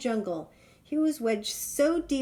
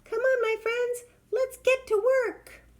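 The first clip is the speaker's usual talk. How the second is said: very high, tiny little voice; 12 semitones higher than usual. Narrator reading a fable, the ant calling its friends to work, in a wee small voice. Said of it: "said a wee small voice".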